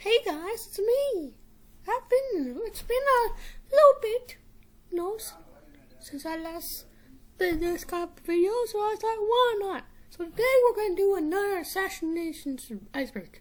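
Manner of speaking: pitch rising very high and swinging around. Opening another Assassination Iceberg video for viewers, Mickey Mouse voice. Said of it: "I went into a Mickey Mouse voice".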